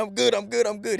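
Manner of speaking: mock hollered, insistent yell. Speaker retells shouting during a fight; retelling a yell. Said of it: "I'm yelling".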